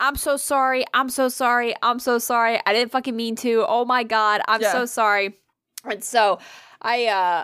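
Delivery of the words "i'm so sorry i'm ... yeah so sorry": put-on flustered, frantic, panicked rush of words. Retelling spilling food on someone, acting out the apology, retelling a panicked apology. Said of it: "So I'm kind of like panicking".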